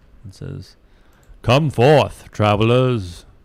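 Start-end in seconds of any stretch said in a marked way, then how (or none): 1.5-3.2 big, loud, booming delivery. A game narrator voices a call to resting travelers, booming voice. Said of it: "a booming voice".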